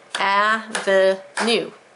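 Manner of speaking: avenue said slowly, clapped out syllable by syllable. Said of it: "Let me clap it".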